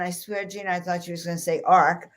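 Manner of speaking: ordinary delivery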